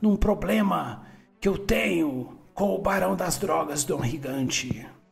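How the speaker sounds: put-on low old man voice. Voicing a character in a story being played out: old man voice. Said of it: "que ele é meio velho".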